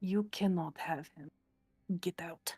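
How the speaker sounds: hushed whisper. Player voices the goddess Urania speaking inward to whatever is in him, whispering. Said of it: "she just whispers".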